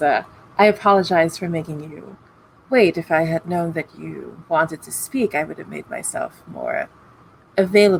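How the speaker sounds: voice trembling throughout. Narrator voicing Malik speaking to Dr. Alcabir, Malik's shaking voice. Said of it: "But Malik's voice is shaking".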